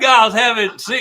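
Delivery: high, loud Cajun accent pitchman voice.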